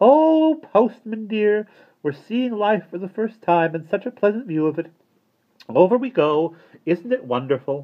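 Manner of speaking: very high, delighted, joyful exclamation. A woman bouncing through the air hand in hand with the postman, crying out happily. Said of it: "cried Miss Tarlet happily".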